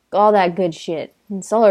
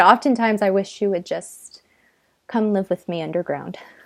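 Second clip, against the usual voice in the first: plain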